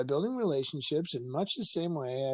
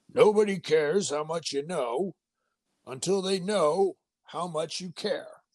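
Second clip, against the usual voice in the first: gruff, rough put-on voice; 3 semitones higher, 3 dB louder than usual. Speaker quoting Teddy Roosevelt as he might have said it, gruff Teddy Roosevelt voice. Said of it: "he had kind of a gruff voice".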